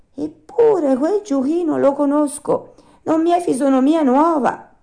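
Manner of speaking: very high, troubled, perturbed voice. Pinocchio, looking at a donkey in the stable, says to himself, troubled.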